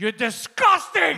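imitated yelling. Retelling what a man on the show yelled at another, imitating someone screaming. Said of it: "And he's just screaming".

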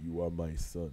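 very deep, hushed, soft regal voice. Joking about Star Wars characters as dads, then switching to a Mufasa voice. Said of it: "I switched to Mufasa".

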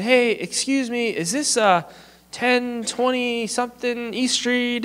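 stretched-out slow talk. Retelling a stranger asking for an address at the door: imitating slow, drawn-out talking. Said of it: "he's talking really kind of slow and drawn out".

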